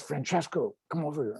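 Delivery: mock hushed secretive tone. Retelling how a bank manager called him over: imitating a secretive tone. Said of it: "in kind of a secretive tone".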